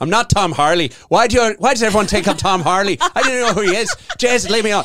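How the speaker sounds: put-on broad Irish accent laid on. Retelling what a man said after being greeted by the wrong name, thickest Irish accent. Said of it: "said in the thickest Irish accent".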